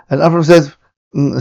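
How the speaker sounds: ordinary talk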